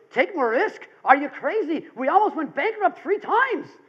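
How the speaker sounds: high-pitched, not-so-good attempt at an Irish accent. Retelling what Dermot said to Brian: Dermot's Irish accent. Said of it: "I'll try to do this in my Irish accent".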